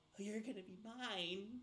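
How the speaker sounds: creepy, eerie creature voice, "mine" drawn out. Voicing a Kenku sitting over someone who wakes, in a creepy Kenku voice. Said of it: "a creepy Kenku sitting over your body going".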